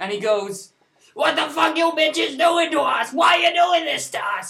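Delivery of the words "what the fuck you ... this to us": enraged furious yelling, pitched very high. Telling about a man lying in a car, retelling a man's angry yell. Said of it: "he's just yelling at cars".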